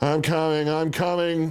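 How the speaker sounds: drowsy, slow, drawn-out wailing. Father, woken by battering on the attic door, calls out, slow sleepy wail. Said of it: "he wailed in a slow, sleepy voice".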